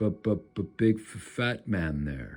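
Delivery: stuttering creature voice. Narrating a scene where a small scaly creature taunts caged prisoners, stuttering creature voice. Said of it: "it stutters in common".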